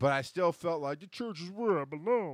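silly, goofy, high-pitched puppet character voice. Speaker recalling a past belief about belonging in church; Muppet voice. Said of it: "I say it in a Muppet voice".

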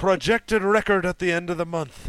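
clumsy, bad Scottish accent, loud and high. Reading a listener's question aloud, as required, in a bad Scottish accent. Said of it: "you have to read it in a Scottish accent".

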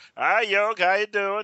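put-on high, drawling Oklahoma accent. Retelling a phone call, quoting Mickey answering Yogi: Oklahoma drawl. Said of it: "that great Oklahoma drawl".

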